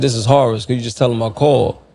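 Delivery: normal talking voice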